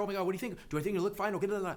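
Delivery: rushed, unsure rambling. Imitating a twenty-two-year-old who doesn't know what to say: imitating fast rambling talk. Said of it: "They're talking so fast, and oftentimes rambling".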